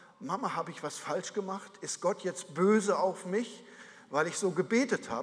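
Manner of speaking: ordinary talk, nothing marked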